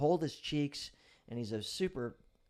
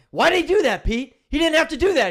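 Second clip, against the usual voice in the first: desperate shout, very high and very loud; 15 dB louder than usual. Retelling a resuscitation, the speaker yells up at Pete: imitating a desperate yell. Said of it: "and then I'm yell".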